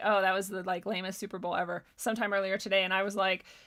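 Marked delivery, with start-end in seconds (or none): none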